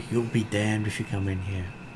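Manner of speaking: hushed, half-whispering voice. Game master voicing a voice that half-whispers back at the players, half-whispered. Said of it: "you hear a voice whisper back at you".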